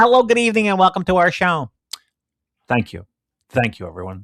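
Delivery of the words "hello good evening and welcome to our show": very high, squeaky helium-like voice. Quoting Andy Taylor huffing helium balloons: helium-filled Andy Taylor voice. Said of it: "And Andy Taylor says".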